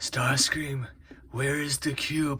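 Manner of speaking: high, slow villain voice.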